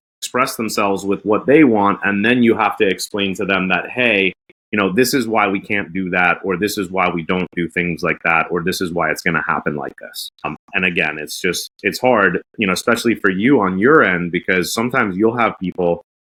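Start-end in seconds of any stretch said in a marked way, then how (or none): none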